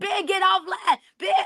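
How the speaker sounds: play-acted, very high-pitched, desperate scream. Speaker retells their own past screaming at someone, retelling a scream. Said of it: "I'm screaming".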